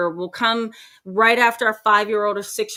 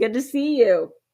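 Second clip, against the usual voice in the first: normal talking voice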